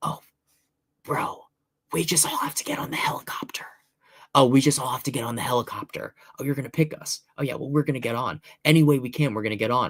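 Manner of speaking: confiding, private side-talk stage whisper. Retelling a private remark someone whispered, imitating someone whispering. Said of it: "you whispering to Jeremy".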